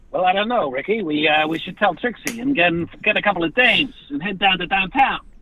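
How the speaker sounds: put-on 1920s gangster accent. Asked by a host for their best twenties gangster, 1920s gangster voice. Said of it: "Your best nineteen twenties gangster voice".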